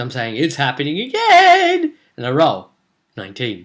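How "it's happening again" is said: very high, words swamped by hysterical laughter. Retelling own words while rolling dice as gm: imitating hysterical laughing while talking. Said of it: "I'm laughing hysterically".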